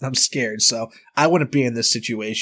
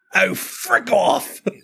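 put-on English accent with very high pitch; 10 semitones higher than usual. One of some country boys doing english accents, in a fake english accent. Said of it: "doing some English accents".

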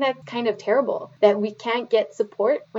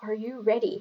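hushed, very quiet delivery; 8 dB quieter than usual. Retelling how she looked at the speaker and asked, very softly. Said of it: "she goes like very softly".

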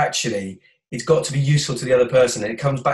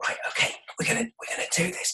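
whispering, much quieter; 9 semitones higher, 9 dB quieter than usual. Retelling what they said to the team in a huddle, retelling a whisper. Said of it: "why are you whispering?".

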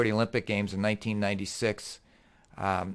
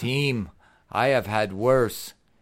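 imitated, put-on Russian accent; 4 dB louder than usual. Retelling Vasily's reply to the speaker's apology, in Vasily's Russian accent. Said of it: "he says to me in his Russian accent".

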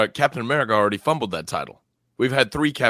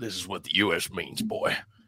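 put-on genteel Southern gentleman accent; 3 semitones lower, 7 dB quieter than usual. Imagining officials making their pitch to him atop the Freedom Tower, imitating a Southern gentleman. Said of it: "send a Southern gentleman to talk to him like that".

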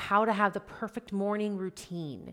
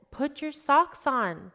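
slightly raised, mildly pitched-up voice; 6 semitones higher, 4 dB louder than usual. A parent retelling what they said to their sensitive kids, slightly raised voice. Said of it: "with an elevated sock sound".

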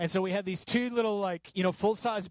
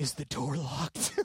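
put-on scared child voice, pitched lower; 4 semitones lower, 4 dB quieter than usual. Retelling being woken at night by a child: imitating Judah sounding scared. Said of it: "he was scared".

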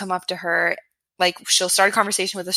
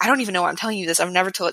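put-on panicked, freaking-out outburst. Retelling what a future boss said in a true story, imitating someone freaking out. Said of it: "he's freaking out".

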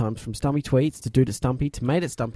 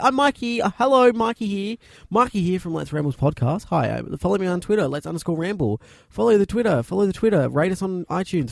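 smug, self-satisfied, pitched-up tone; 7 semitones higher, 4 dB louder than usual. Teasing a friend by imitating them: mocking a friend's smug voice. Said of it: "you go around to everyone in the street like".

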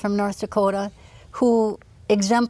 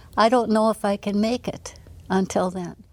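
normal talking voice

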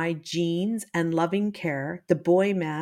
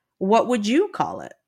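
huffy, indignant tone; 3 semitones higher, 3 dB louder than usual. Narrator reading the narrator's own retort to him about the citation, huffy. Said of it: "I huffed, sensing an opportunity to finally yell at him".

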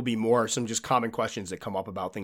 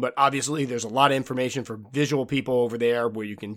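plain

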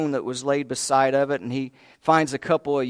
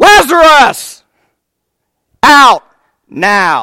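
booming, swooping, very loud, high commanding shout; 9 semitones higher, 17 dB louder than usual. Retelling a Bible story, the speaker acts out a call to Lazarus, retelling a loud call. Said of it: "it says with a loud voice".

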